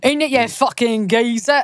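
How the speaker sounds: put-on Cockney accent. Friends joke the films should have made him Cockney; Harry Potter in bad Cockney accent. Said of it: "that fucked up Cockney accent".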